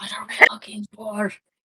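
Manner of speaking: in-character stage whisper. Voicing a character who leans in to ask a question: whispering in character. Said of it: "kinda whisper".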